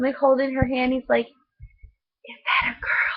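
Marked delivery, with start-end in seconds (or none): 1.3-3.2 put-on very slow, drawn-out, breathy little-boy whisper. Retelling what a boy asked his mom in a restaurant: imitating a boy whispering. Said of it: "he's trying to whisper".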